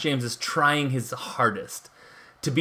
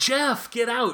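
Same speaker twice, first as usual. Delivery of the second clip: put-on high-pitched yelling. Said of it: "she yells to the stoner guy".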